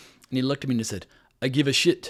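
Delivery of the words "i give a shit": put-on speaking with a Croatian accent. Retelling what a producer said: imitating Branko's thick Croatian accent. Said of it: "the reason I'm imitating him in this fashion".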